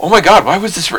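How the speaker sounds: put-on concerned tone. Speaker imitates how the listener sounds when disagreeing, imitating an alarmed tone. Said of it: "You always come across like".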